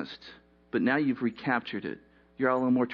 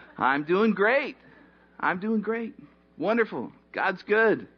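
high, forced, falsely cheerful voice; 7 semitones higher than usual. Imitating someone greeted at church who hides fear: imitating a falsely cheerful reply. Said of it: "which in essence is lying".

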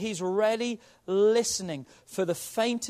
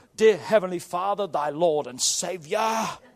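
put-on low, solemn, holy-sounding prayer voice; 4 semitones lower, 3 dB louder than usual. Showing how people sound when they shift into praying, holy prayer voice. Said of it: "shift into their prayer voice".

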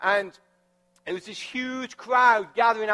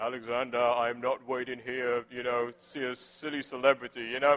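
very low, very English put-on accent; 9 semitones lower, 6 dB quieter than usual. Quoting the speaker's very English dad while they wait, imitating dad's English accent. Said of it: "he's just like very English".

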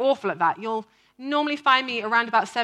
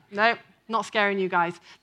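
plain

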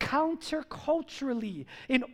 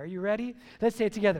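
ordinary talk, nothing marked

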